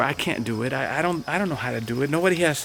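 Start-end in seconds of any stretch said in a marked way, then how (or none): none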